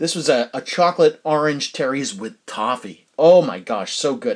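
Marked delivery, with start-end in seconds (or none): 3.2-4.4 salesy TV advertisement voice. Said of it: "I sound like I'm doing an advertisement".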